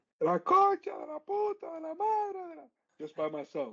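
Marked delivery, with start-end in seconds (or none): 0.2-2.7 put-on very high, drawn-out, furious angry yell. Retelling yelling alone in the car when it snowed: imitating an angry yell. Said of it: "I started yelling like the Argentinian".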